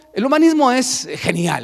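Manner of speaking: tongue-in-cheek sarcasm. Saying a line, then admitting it was meant sarcastically: sarcastic tone. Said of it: "lo digo sarcásticamente".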